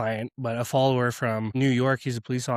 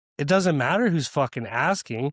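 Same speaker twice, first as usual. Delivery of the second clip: ordinary talk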